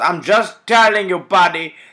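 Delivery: very loud, high-pitched, put-on Indian accent. Retelling a shop visit, quoting the guy behind the counter in a put-on indian accent. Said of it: "you do the voice good".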